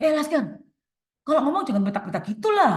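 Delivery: loud, fast, angry scolding tone. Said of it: "dengan nada marah".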